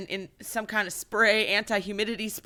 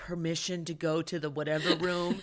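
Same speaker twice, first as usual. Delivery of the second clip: heavily sarcastic, mocking tone; 4 semitones lower, 6 dB quieter than usual. Retelling Cassian asking permission to go somewhere: sarcastic Cassian impression. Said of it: "real sarcastic about it".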